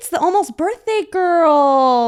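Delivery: odd high voice, drawn out. Retelling a horror film scene, imitating Longlegs' very odd voice. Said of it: "speaking in this very odd voice".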